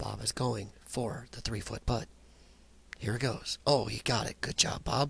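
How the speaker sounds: hushed, whispered golf-announcer commentary voice. Speaker mocks how golf commentators talk during a putt; whispering like a golf announcer. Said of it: "the guys whisper".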